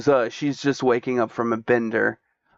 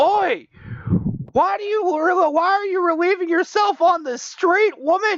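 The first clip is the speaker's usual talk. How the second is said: shrill, very high, indignant angry yelling. Voicing a townsperson in the game: shouting angrily at someone. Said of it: "Someone then shouting".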